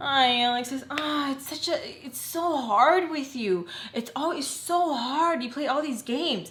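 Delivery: high, put-on upset, put-upon tone. Retelling what she said when she got upset: imitating her upset. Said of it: "And she gets upset".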